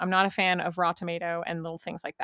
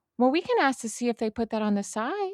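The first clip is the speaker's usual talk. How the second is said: put-on baby talk, higher; 5 semitones higher than usual. Retelling suggesting a dish to a picky parent: retelling talking like a parent to a child. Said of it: "literally like talking to a child".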